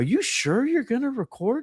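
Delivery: high, worried voice.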